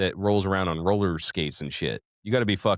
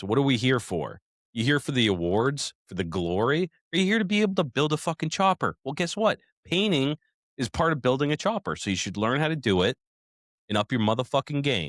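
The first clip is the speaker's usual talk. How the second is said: angry, heated, fired-up rant, higher pitch; 5 semitones higher than usual. Ranting to another speaker about painting bikes: angry ranting.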